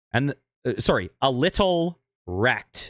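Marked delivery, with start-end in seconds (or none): 1.2-2.9 careful pauses between "little" and "wrecked", word by word. Repeating your own words before Kay says anything, to avoid being demonetized, enunciated with a space between the words. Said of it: "enunciate that sentence with a space in between the words".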